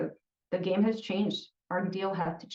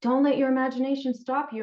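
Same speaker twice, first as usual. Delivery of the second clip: sardonic, sarcastic, raised and pitched-up voice; 6 semitones higher, 5 dB louder than usual. Talking about chemicals sold online to make drugs, sarcastic. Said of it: "I'm totally being sarcastic here".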